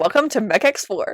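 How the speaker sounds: mock slow, laid-back cool-guy swagger. Retelling a scene where a character acts cool: imitating a cool-guy act. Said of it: "Ryan is acting like all cool guy".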